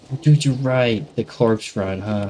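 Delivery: ordinary talk, nothing marked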